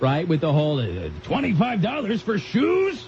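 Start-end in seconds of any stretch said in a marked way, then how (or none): 1.2-3.0 high, incredulous, balking dad voice. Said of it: "you turn into your dad".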